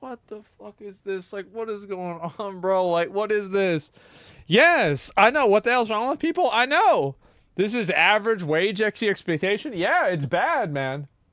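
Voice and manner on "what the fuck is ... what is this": put-on confused voice, quieter. Acting out a Jack in the Box worker's reaction: imitating a confused worker. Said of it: "he's confused".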